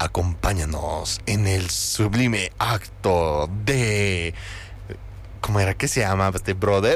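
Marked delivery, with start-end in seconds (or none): 0.0-4.3 slow off-screen announcer voice-over narration. Joking about a baptism invitation, doing its invitation line in a voice-over voice. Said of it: "Y su vocecita en off".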